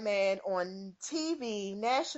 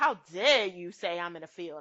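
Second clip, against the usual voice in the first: put-on proud bragging voice, pitched lower; 4 semitones lower than usual. Retelling how Bill Maher said it on TV: imitating Bill Maher's proud tone. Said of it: "he said it with a sense of pride".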